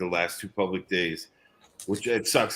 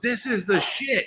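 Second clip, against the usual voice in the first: put-on very high, slow, thrilled little toddler voice. Retelling what a three-year-old nephew said atop a bouncy castle: imitating an excited kid. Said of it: "he's all excited".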